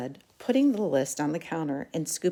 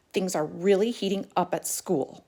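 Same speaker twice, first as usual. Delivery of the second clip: plain reading voice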